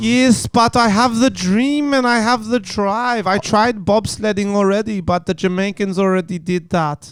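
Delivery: put-on speaks with Icelandic accent. Pretending to be from Iceland in a made-up scene, fake Icelandic accent. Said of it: "let's pretend we're Icelandic".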